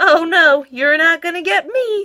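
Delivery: high, loud crying out. Spud, told it is his turn to be washed, turns to run: crying out. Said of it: "cried Spud".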